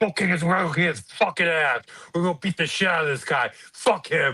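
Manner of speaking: acted fired-up, hyped-up energetic delivery. Imagining a new york firefighter hyping a fighter up as he walks out: imitating a hype-up pep talk. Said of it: "pumping him".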